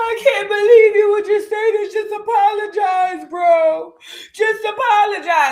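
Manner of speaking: put-on screaming, howling sobs, high and wailing. Retelling how Tifa pleaded while screaming and howling: imitating someone screaming and crying. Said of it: "screaming and howling all in the fetal position".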